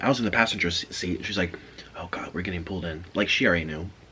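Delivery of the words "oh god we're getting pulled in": low, hushed, half-whispered aside. Retelling what the driver half-whispered to them in the car, retelling a half-whisper. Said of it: "she whispers to me".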